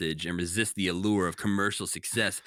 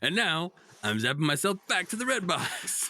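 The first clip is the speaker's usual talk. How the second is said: put-on puppet shouting, higher; 10 semitones higher than usual. Retelling how Rocco gets in the red box: imitating Rocco shouting. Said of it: "then just shouts".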